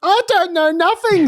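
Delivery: very high-pitched, sarcastic tone. Mocking a true crime figure's denial: sarcastic imitation of Fran. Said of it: "says Fran".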